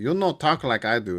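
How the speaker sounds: bad, horrible, overdone put-on Spanish accent.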